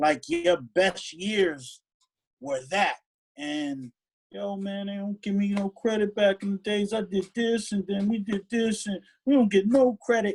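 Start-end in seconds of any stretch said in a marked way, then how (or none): 4.3-10.3 put-on beaten-down complaining tone. Imitating someone who complains about never getting credit, mimicking a defeated complaint. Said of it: "It just sounds defeated".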